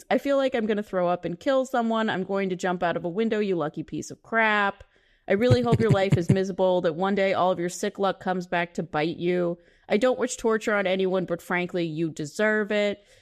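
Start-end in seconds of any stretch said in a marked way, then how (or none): none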